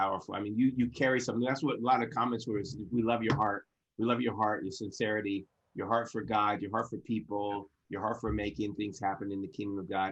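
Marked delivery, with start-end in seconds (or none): none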